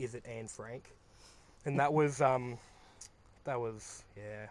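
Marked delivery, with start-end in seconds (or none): 0.0-0.8 put-on, completely flat, very hushed low monotone. Retelling a friend's answer to a joke: imitating a completely monotone reply. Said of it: "completely monotone, like, without looking up".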